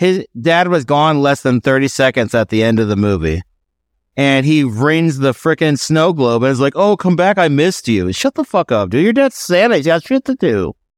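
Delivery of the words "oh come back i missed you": mock whiny voice, much higher pitch. Someone mocking a movie character who misses his dad, mocking whiny voice. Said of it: "he whines all the time".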